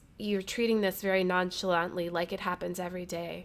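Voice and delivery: normal talking voice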